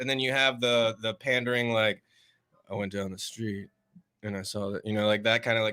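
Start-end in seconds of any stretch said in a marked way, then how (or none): 2.7-4.8 slow, flat, deadpan stand-up comic delivery. Describing types of stand-up comics, acting one out: imitating slow deadpan comic. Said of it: "slow pandering, deadpan guy".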